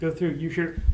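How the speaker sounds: ordinary delivery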